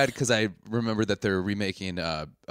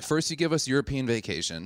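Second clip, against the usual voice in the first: normal talking voice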